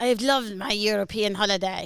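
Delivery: attempted put-on Spanish accent. Asked by a friend to say the sentence in Spanish, attempted Spanish accent.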